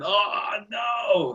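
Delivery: pained, anguished groan. Mimicking how another speaker just reacted: imitating an anguished cry. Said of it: "I could feel the pain when you went".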